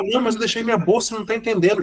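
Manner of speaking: very high, frantic, desperate, rushed. Retelling a woman's panic over a bag left on a train: imitating a desperate woman. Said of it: "ninguém entendia o desespero dela".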